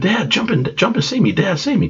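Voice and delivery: very high, frantic, panicked scream. Retelling falling into the deep channel, acting out screaming for dad to save them. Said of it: "I'm screaming".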